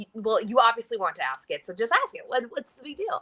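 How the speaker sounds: put-on fed-up, annoyed, impatient tone. Retelling urging a date to just ask his question: retelling own annoyed words. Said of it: "I was getting kind of annoyed".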